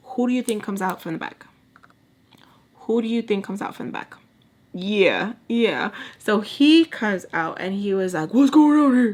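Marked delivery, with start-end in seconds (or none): 8.3-9.2 booming, thundering, very loud voice. Retelling a man coming out during an argument: imitating a loud deep voice. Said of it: "loud, deep".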